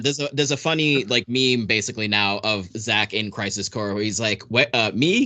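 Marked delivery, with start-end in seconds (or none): 4.4-5.3 fake dim-witted voice. Quoting a meme of Zack from Crisis Core: dumb-sounding Zack voice. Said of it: "in a really dumb way".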